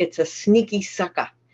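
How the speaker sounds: thick hometown Boston accent. A speaker from Boston switches into their own hometown accent: Boston accent. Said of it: "I gotta say it in our accent".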